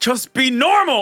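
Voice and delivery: high, loud, exasperated yell.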